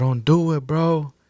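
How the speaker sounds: acted yelling. Retelling shouting at a man standing with his back turned on the highway: retelling a yell. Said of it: "So I just start yelling at him".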